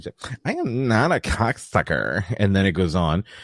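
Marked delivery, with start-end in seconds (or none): 0.4-2.2 put-on character voice with swooping pitch. Retelling a line from a movie scene: imitating a movie character's voice. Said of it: "that voice got me that time".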